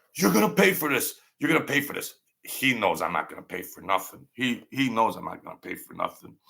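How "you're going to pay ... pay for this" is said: put-on screaming at the top of the lungs, twice. Retelling how the other man reacted to the fall: imitating someone screaming. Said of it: "And he's screaming".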